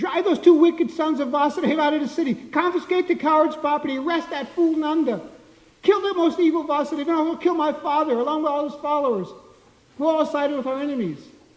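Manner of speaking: panicked, frantic, rattled off fast and loud. Reading a scripture text aloud, voicing Kamsa's orders, speaking very fast. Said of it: "speaking very fast".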